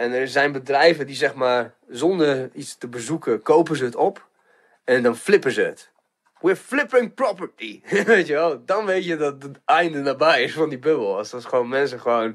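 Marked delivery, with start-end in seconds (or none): 6.4-7.8 put-on American New York accent, pitched up. Speaker describing a housing-market commentator, quoting him in a New York accent. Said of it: "die heeft overal zo'n New York accentje".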